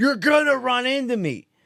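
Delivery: sharp, snippy, irritated snap, pitched very high. Retelling a lady behind in line at Costco: imitating a lady snapping. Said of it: "This lady behind me fucking snaps".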